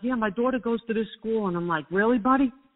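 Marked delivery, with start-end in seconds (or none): 0.0-1.5 heavy put-on Brooklyn accent, laid on thick. Speaker imitates a man who talked about his daughter; imitating a thick Brooklyn accent. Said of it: "He's like".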